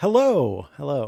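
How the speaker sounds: loud broadcaster's on-air radio-announcer voice. Greeting the others on joining the call: radio voice. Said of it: "where were you hiding this radio voice".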